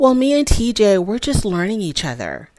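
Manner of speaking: put-on sweet, innocent little-girl voice. Retelling how Kim answered after her husband spoke, in a sweet little-girl voice. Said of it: "in a very sweet, innocent little girl voice".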